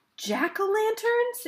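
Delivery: very high-pitched, exclaiming outcry. A listener hearing about carved pumpkin lanterns in the windows, exclaiming. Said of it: "Exclaimed Judith".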